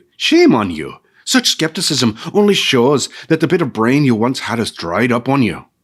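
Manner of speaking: grumbling, snappish, angry scolding tone. Reading a story aloud, the narrator voices Urgel calling angrily from the cave: angry scolding Urgel. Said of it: "the old woman grumbled. / "She's a good old soul. She just needs something to grumble about now and then. / the old woman grumbled. / the old woman grumbled. / [name] snapped".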